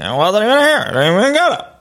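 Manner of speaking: odd, nervous, high, swooping weird voice. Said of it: "a weird character voice".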